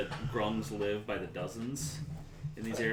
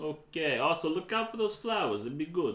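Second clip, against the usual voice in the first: put-on Brooklyn Jamaican accent, higher; 6 semitones higher, 4 dB louder than usual. Voicing a game character giving tips: Brooklyn Jamaican accent. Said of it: "Get that Brooklyn Jamaican accent going on".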